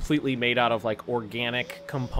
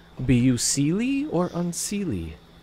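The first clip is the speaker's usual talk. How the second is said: wispy, drifting female voice, high and slow; 5 semitones higher than usual. Game narrator voicing a voice from between the trees, in a very soft female voice. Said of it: "It's very soft female voice".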